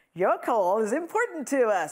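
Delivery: put-on American accent, recorded-message voice. Quoting a phone queue's recorded message, in an american accent. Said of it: "I never know why I say that in an American accent".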